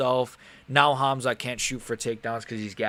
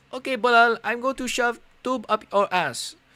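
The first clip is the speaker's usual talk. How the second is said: put-on Brazilian accent at a very high pitch; 11 semitones higher, 4 dB louder than usual. Imitating Bonfim without knowing what he sounds like, doing a Bonfim impression in a put-on Brazilian voice. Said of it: "I'm going to do my best Brazilian impression".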